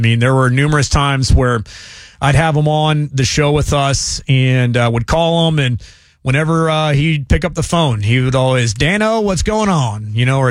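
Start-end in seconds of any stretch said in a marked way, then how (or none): 8.7-10.1 friendly put-on Southern Louisiana accent, high. Recalling how a former show guest answered the phone; imitating a Southern Louisiana accent. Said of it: "just in that Southern Louisiana accent".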